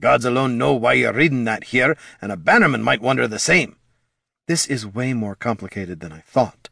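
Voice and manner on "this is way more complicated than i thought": quiet murmuring. Laruna murmurs as she looks over a sheet of instructions. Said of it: "Laruna murmured".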